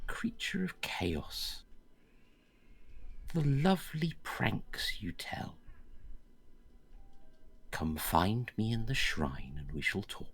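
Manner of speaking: small, high, sing-song little voice. Game master voices a voice calling to the players from a green light: little voice. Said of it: "a little voice out of the green light says".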